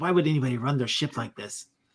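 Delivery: quiet muttering, mumbling under breath. Voicing a bossy crewmate judging the ship: muttering under breath. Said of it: "muttering under her breath".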